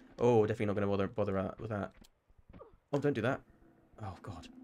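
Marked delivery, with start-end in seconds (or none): 2.9-4.5 panicked voice. Playing a game as enemies appear, panicking. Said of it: "I'm panicking".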